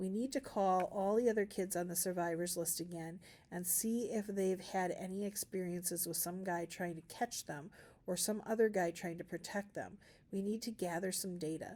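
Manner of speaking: ordinary delivery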